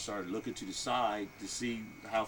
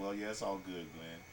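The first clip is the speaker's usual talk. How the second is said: ordinary talk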